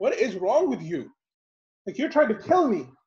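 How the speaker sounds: mock furious, disbelieving, accusing angry outburst. Retelling how a young man pulled from the water reacted: imitating an angry young man. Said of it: "the young man is definitely very angry".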